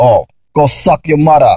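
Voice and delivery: clumsy, bad put-on West Indian accent. Speaker imitates what West Indian people say, in a bad West Indian accent. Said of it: "That's probably the worst West Indian accent".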